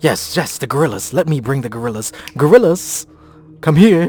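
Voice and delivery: loud, high, put-on Irish accent. Voicing a character in a scene, doing an Irish accent. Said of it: "I was doing an Irish accent".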